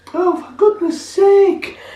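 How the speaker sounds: very high-pitched woman's voice. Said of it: "You should have said that in a high voice".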